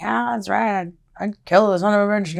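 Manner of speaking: heated, indignant angry voice. Retelling what mom would say watching TV episodes: imitating mom's angry voice. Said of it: "whatever she'd say in her angry voice".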